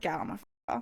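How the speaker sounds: breathy, whispered, deadly serious tone. Retelling how he repeated the order to leave his car: imitating a deadly serious tone. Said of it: "being deadly serious".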